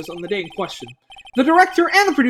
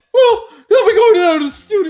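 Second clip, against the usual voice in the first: voice cracking, much higher, louder; 8 semitones higher, 5 dB louder than usual. Speaking a line aloud when the voice suddenly cracks. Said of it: "I had a reverse voice crack there".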